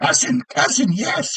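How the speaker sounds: high-pitched, excited, eager goblin cry. Game master voicing the goblin Smoot greeting the players' characters: Smoot's goblin yell.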